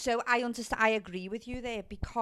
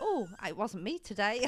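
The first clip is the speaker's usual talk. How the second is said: ordinary talk, nothing marked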